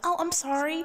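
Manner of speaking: put-on very high-pitched, frightened, small voice. Retelling an apology after customers said the food was wrong: imitating own scared voice. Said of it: "that's how I literally sound".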